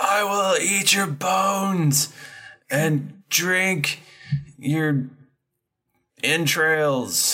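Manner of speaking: very high, slow, drawn-out orc monster yell. Voicing an orc who yells back a threat: orc yelling back. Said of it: "it yells back".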